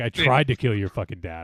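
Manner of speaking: put-on surly angry voice. Joking about what Kenobi should have said: imitating surly Obi-Wan Kenobi. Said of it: "He's like".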